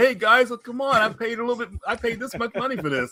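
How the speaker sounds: high-pitched complaining voice, on the verge of tears. Retelling a seller's complaint about lost money: imitating someone almost crying. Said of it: "He was almost crying, complaining".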